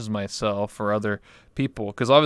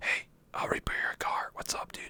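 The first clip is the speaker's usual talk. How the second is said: barely audible, hushed, breathy whisper. Retelling talking to players in a game while whispering: imitating own whispering. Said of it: "just whispering".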